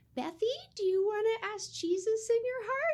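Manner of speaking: very high mother voice, lifting. Retelling how her mom asked her as a toddler: high mom voice. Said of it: "she has a high voice".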